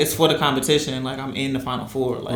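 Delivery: normal talking voice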